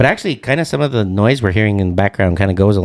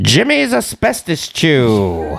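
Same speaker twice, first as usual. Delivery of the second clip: put-on old-timey radio announcer voice, higher pitch; 5 semitones higher than usual. Imitating an old baseball radio call and sponsor read: imitating old-timey announcer speak. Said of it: "how they would talk in those movies".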